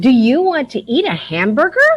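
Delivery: upward inflection, pitch rising at the end. Teacher modeling an interrogative sentence for students, with rising question intonation. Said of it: "remember how your voice should go at the end of an interrogative".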